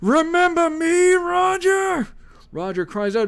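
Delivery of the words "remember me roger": high, shrill, loud, ominous villain voice. A narrator reads a cloaked man greeting another man, in a high-pitched Judge Doom voice. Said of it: "In a high-pitched voice".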